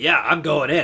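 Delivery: ordinary delivery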